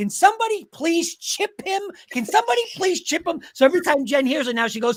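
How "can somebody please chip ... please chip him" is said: high, exasperated, frustrated scream, acted and repeated. Retelling watching Raiders versus Chargers as Crosby piles up sacks: retelling frustrated screaming. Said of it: "and I'm screaming".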